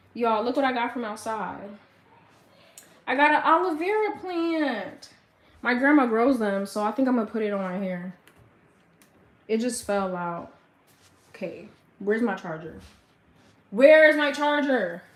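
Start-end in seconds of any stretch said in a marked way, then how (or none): 13.7-15.0 loud, hollering yell, projected far. Speaker searching for a charger while talking to viewers, yelling. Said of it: "Sorry for yelling at y'all".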